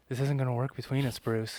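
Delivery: seductive delivery, full of allure. Asked to do a seductive voice for Catwoman, speaking to Bruce; seductive Catwoman voice. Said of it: "seductive voice for".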